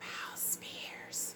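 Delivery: soft, whispered ASMR-style voice. Naming the first guest in a reunion review: ASMR voice. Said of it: "I like to say it in the A S M R, um, voice".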